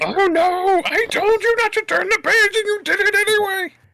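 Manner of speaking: very high-pitched, loud puppet voice. Doing a line from a kids' book after another speaker mentions Grover: Grover voice. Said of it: "That's not a bad Grover".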